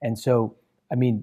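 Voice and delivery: ordinary talk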